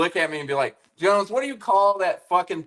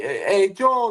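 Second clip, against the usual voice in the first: put-on East Coast accent, higher pitch; 4 semitones higher than usual. Imitating a coworker from Boston: East Coast accent. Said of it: "what accent was that, that you were just trying to do".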